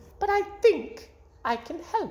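sunny, bright, very high voice. An old woman at the front door speaks to the man who opened it, bright. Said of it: "she said brightly".

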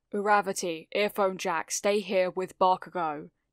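ordinary talk

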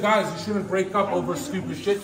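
usual speaking voice

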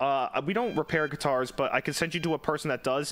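plain

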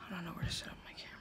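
soft, hushed, unvoiced whisper.

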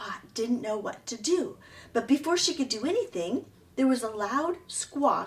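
ordinary delivery

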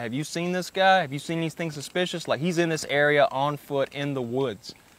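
normal talking voice

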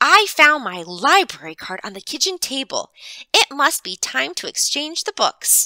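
bright sudden exclamation. Mrs. Unger replies to him as if reminded: exclaiming. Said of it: "she exclaimed".

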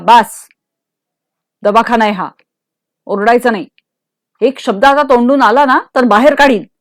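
stern, harsh. In a hospital, a man grips a woman's arm and pulls her back from the door; harsh. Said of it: "कठोर शब्दात तो तिला म्हणाला".

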